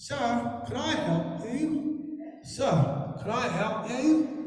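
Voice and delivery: put-on slow, high, thick, hard-to-follow London accent. Recalling being lost in London, imitating locals with a thick London accent. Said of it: "they talk funny, talk like this".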